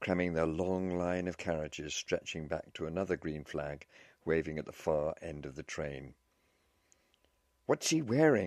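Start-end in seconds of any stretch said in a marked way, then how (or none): 7.7-8.5 loud, high shouting. Over the hubbub of a crowded train platform, a man is shouting. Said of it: "he shouted".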